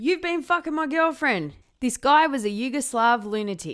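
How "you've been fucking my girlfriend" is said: acted shout, high-pitched and full-voiced. Retelling how a man who pulled a gun on Mel shouted; retelling a shout. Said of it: "He's shouting".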